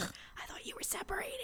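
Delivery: hushed, secretive whisper. Retelling what a friend on the show said, imitating someone whispering. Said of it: "she's whispering it".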